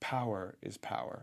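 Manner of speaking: soft, hushed whisper spoken close up. Retelling a show scene where she whispers to him: imitating a whisper. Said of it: "whispers to him".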